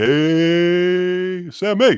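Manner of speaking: high cartoonish voice, "hey" stretched out. Showing how someone might talk: Yogi Bear voice. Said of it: "you're doing, like, a Yogi".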